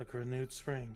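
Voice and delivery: hushed whispering. Narrator voicing a character in a story scene, whispered. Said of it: "And he just whispers".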